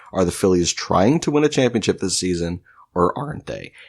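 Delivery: ordinary talk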